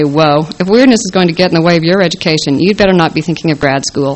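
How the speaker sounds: ordinary delivery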